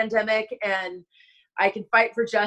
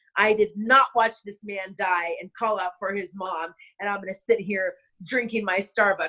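ordinary talk

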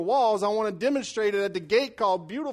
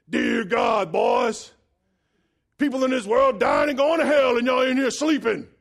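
worn-out, worn-down, shot voice; 3 semitones higher, 4 dB louder than usual. Retelling how Brother Keith woke everyone one morning: imitating Brother Keith's voice. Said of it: "This is kinda how he talks".

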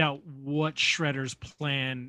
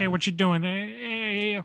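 high New York mobster voice, drawn-out "hey"; 5 semitones higher than usual. Describing a cartoon about mobster pigeons, doing a Goodfeathers mobster voice. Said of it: "It's like a greaser mobster. ... like New York".

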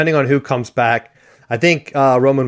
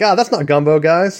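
put-on Midwestern accent, higher pitch; 5 semitones higher than usual. Speaker imitates a former Notre Dame coach showing up, Midwestern accent impression. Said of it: "use his Midwestern accent on you".

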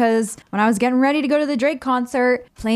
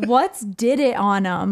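ordinary delivery

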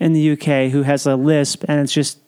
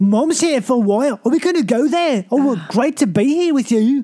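odd blend of Scottish and Irish accents, pitched up; 9 semitones higher than usual. Mimicking a girl from a movie he did, in a weird Scottish-Irish mixed accent. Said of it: "It's like this weird mixture of Scottish and".

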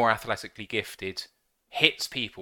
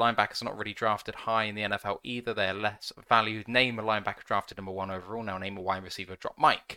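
ordinary talk

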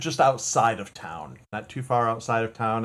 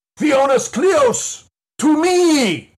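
very high, very loud booming yell; 10 dB louder than usual. Rider at the edge of town calling the crew to raise an alarm, booming command shout. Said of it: "yell loudest, boomingest command voice I can get".

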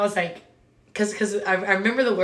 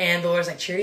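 ordinary talk

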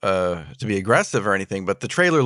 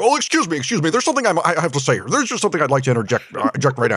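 insistent, overly polite, pushy American voice, pitched up; 7 semitones higher than usual. Retelling a film scene where an American guest interrupts: imitating Terry Gilliam's interjection. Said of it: "he's like".

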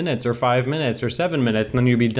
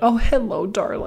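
prim, proper, very high-pitched polite tone; 10 semitones higher than usual. Retelling how a neighbor greeted them outside: imitating a prim, proper neighbor. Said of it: "so, like, proper".

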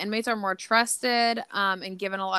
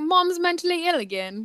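put-on pitched-up British accent; 7 semitones higher than usual. Speaker voices her cat staring up at her from her feet, Hector's British accent. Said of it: "my cat has a British accent".

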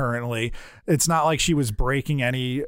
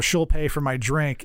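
normal talking voice

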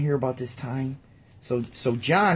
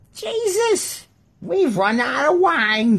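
very high, raised voice, loud; 14 semitones higher, 5 dB louder than usual. Retelling the wedding story, doing Mary's voice. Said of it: "I'm doing Mary's voice like this".

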